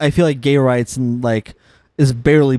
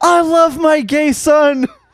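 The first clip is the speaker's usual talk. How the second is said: mock very high, stretched, drawn-out grief-stricken yell; 3 dB louder than usual. Retelling a movie's funeral scene where a grieving father yells: imitating a father yelling. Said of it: "he just yells".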